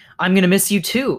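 plain

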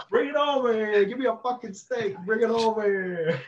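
mock heated shouting. Imagining what a man hears in the background, imitating Robert De Niro yelling. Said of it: "he's yelling at his wife".

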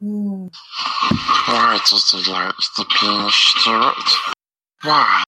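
put-on fantasy creature voice. Asking the hosts a question, in a Smeagol impression. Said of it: "That was a very good Smeagol impression".

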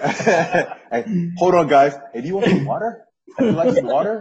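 very high-pitched, loud, chatty patter. Joking that a friend drives Uber during a Zoom call: imitating Phil as an Uber driver. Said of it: "This was gonna be in a Zoom in his Uber".

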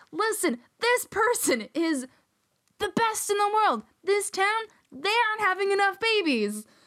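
mock shouting rant. Describing a man the speaker watches a lot, acting him out: imitating someone yelling. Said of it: "He yells".

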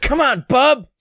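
very high-pitched, eager, excited voice. Imitating how Sam would say the line: Sam impression. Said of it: "Cannot do a good Sam".

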